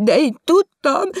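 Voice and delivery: very high, loud, breathless gasping, fighting for breath. A visitor who rushed over after reading the evening paper speaks: gasping for air. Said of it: "fuldoklott levegőért kapkodva".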